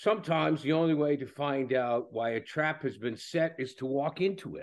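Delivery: very bad put-on British accent. Quoting a character's line, very bad British accent as Jackson Lamb. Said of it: "I'm going to do it in a very bad British accent".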